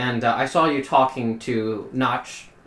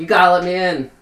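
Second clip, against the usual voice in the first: loud, high-pitched screaming; 7 semitones higher, 7 dB louder than usual. Voicing a character pounding on a door: screaming to be let in. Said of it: "screaming outside, like".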